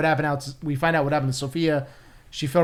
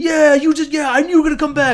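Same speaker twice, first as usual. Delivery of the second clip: excited, higher and louder; 12 semitones higher, 7 dB louder than usual. Retelling how the episode ends, imitating an excited Penguin. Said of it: "so excited that Vic came around".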